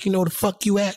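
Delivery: play-acted, high, in-your-face screaming and yelling. Retelling a man who ran up on them in the street: retelling screaming and yelling. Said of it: "screaming and yelling like he was like".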